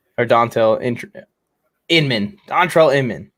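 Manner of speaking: slow, stuttering, stumbling over a word. Watching the game, correcting a player's name, stuttering over it. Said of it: "Sorry, I'm stuttering".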